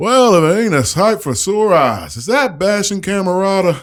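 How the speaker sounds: put-on elderly bear voice, very high. Voicing an old bear folk greeting a visitor: voicing an old bear-folk elder. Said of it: "you see a super old bear folk".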